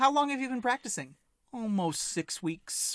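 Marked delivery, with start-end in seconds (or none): 1.5-3.0 casual, unbothered, nonchalant, matter-of-fact. Answering how long he has been practicing: nonchalant. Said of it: "He says it so nonchalant".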